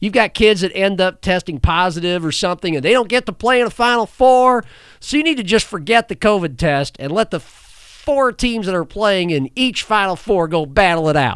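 put-on angry Southern accent. Acting out Kim Mulkey talking about the Final Four, as a Kim Mulkey impression, put-on angry Southern accent. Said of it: "my impression of a Southern woman and her angry accent".

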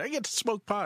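put-on excitement, very high-pitched, thrilled glee. Retelling what a parishioner with glaucoma said when he came in: imitating excited parishioner. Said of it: "he was all excited".

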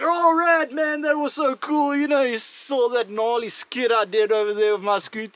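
odd, Australian-sounding put-on accent. Quoting what some people said to him, Australian-sounding put-on accent. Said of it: "an Australian accent?".

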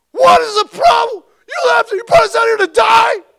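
very loud, very high, shrill terrified shrieking. Retelling how the terrified people screamed at Moses, acting out screaming. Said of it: "They were screaming at him".

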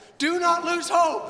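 shouting. Speaking to an audience about a ministry's message, repeating its plea: yelling. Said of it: "Sorry for yelling".

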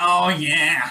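put-on moaned delivery in a Boston accent. Recalling a film scene, the speaker imitates it in the Boston accent from Ted. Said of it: "doing the Boston accent".

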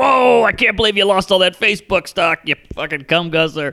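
outlandish, eccentric, brash radio DJ patter. Describing an outlandish TV guy who was like a radio DJ: imitating a radio DJ. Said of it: "he was like a radio disc jockey guy".

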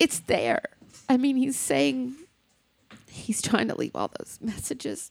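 near tears. Speaking about a man who knew his time was short, emotional, close to tears. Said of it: "I'm sorry, I'm so emotional".

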